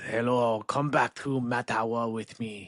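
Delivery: put-on heavy, thick French accent. Retelling how the grandfather spoke on meeting the grandmother, in a thick French accent. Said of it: "A very um thick French accent".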